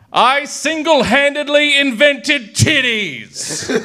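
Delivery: very high, slow, drawn-out, excited, proud glee. Narrator reads God clapping over his new creation, excited and proud. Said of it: "clapping in excitement, beaming with pride".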